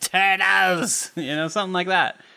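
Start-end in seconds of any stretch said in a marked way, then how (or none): 0.0-1.1 growling cartoon villain voice. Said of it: "I always imagine it was like".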